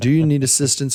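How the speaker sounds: plain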